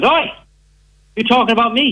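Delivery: high, mock drunken heckler voice, sounding offended. Retelling how a drunk heckler piped up during a set: imitating a drunk heckler. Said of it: "'cause he's full of liquor".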